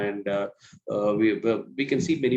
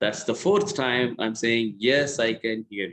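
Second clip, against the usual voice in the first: plain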